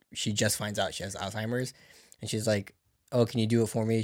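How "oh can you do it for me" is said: ordinary delivery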